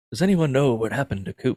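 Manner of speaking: creepy, spooky mystery-show host voice. Retelling a movie parody of the mystery show: Robert Stack voice. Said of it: "Robert Stack, come in and be like".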